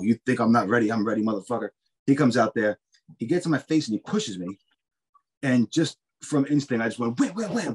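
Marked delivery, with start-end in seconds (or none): none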